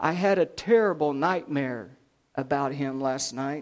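ordinary talk

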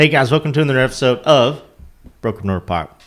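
talking around candy. Host opening an episode of broken north pop, talking with candy in mouth. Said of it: "it's hard for me to talk because so I got a Jolly Rancher in my mouth".

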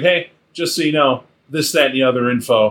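usual speaking voice

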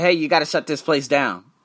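ordinary talk

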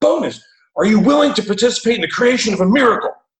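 mock, very high, fast, enthusiastic amped-up yell. Retelling how a friend nicknamed Admiral greets the speaker: imitating Admiral's excited scream. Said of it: "And he's like screaming. He's like, not angrily, enthusiastically, amped up".

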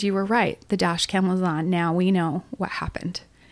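ordinary talk, nothing marked

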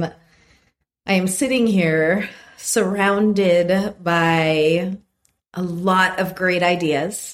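very slow, chuckling, laughing through the words. Describing a messy desk full of ideas, laughing while talking. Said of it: "I'm laughing at myself".

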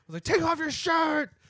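screaming. Recalling yelling at Ian when the room got quiet, retelling a scream. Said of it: "I screamed it out".

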